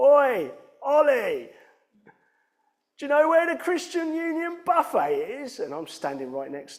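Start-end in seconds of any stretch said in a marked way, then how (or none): 0.0-5.6 shrill, very loud, high-pitched holler at top volume. Retelling how a woman shouted across the bar to a steward, retelling a loud shout. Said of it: "she shouts out in the loudest voice".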